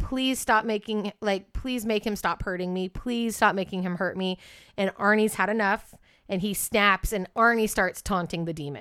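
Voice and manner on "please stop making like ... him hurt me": put-on desperate, pleading voice. Retelling how a boy begged his family for help: imitating David begging. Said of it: "David is basically just begging".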